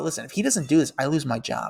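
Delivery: normal talking voice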